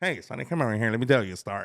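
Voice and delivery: put-on old-timey gangster voice. Showing how old-timey people would talk to him, in an old-timey gangster voice. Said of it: "it sounds like it's gonna be like old Tommy Gun time".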